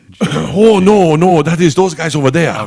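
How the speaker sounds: bad put-on Chinese accent. Acting out a made-up scene with friends: really bad Chinese accent. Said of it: "really bad Chinese accent".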